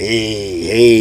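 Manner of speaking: put-on, gorilla-like growling voice. Recounting when they played the track, voicing Pat in the back: imitating Pat's growl. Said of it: "he had that old growl, gorilla growl like sound".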